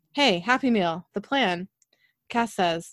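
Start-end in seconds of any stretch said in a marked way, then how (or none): none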